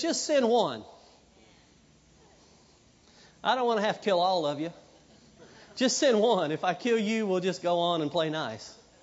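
normal talking voice

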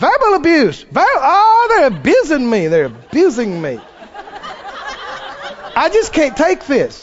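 mock swooping, sing-song, whiny holler. Mocking people who reject correction: mocking a hollered complaint. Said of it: "they've learned to holler".

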